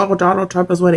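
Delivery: scornful, derisive parroting parody. Mimicking another speaker's repeated claim while arguing: mocking imitation of another speaker. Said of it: "you're saying weird shit. Like".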